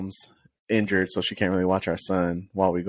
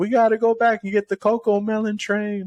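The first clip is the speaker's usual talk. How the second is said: higher put-on child scream; 14 semitones higher, 3 dB louder than usual. Retelling how the son screamed on the way home: imitating a child screaming. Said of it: "he's just screaming, like".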